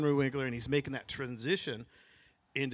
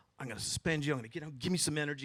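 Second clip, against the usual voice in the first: taunting, goading, needling manner; 4 dB quieter than usual. Retelling an actor in character as a despised principal getting in his face: imitating Himbry taunting. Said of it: "he went into Himbry character".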